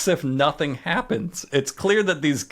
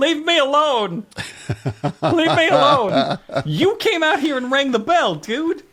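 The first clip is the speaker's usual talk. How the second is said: mock very high, shrill yell; 10 semitones higher, 4 dB louder than usual. Retelling what Buck yelled when something showed up: imitating Buck yelling. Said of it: "he yells".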